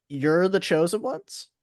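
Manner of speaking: utterly incredulous, disbelieving tone. Voicing a creature questioning the party: incredulous voice. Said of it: "in the most incredulous voice".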